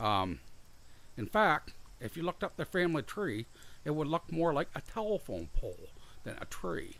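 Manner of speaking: very high voice with a speech impediment. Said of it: "it's more of a speech impediment, I think".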